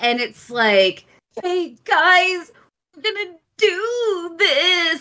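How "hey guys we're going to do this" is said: stiff, awkwardly forced, stilted delivery, pitched up. Mocking an actor's delivery in a film scene: imitating forced acting. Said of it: "it's so forced".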